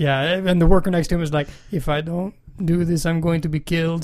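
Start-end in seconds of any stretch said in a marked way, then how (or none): 1.7-4.1 put-on Mexican accent laid over the whole line. Quoting a factory worker seen in a video: put-on Mexican accent. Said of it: "your accent, it sounded Mexican".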